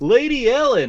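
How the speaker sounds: in-character yelling. Running toward an explosion down a corridor: yelling in character.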